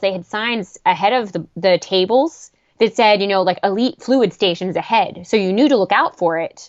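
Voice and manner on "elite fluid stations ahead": normal talking voice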